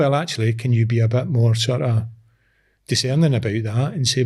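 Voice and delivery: ordinary talk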